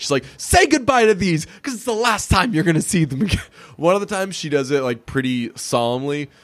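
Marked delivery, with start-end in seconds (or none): 0.4-3.4 play-acted, full-on, high yelling. Speaker quotes a TV character's usual line, retelling a yell. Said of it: "She's usually yelling it".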